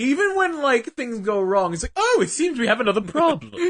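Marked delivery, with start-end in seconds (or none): 2.0-3.5 put-on, smug British accent. Imitating Titan reacting when things go wrong: Titan's British voice. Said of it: "he's very British".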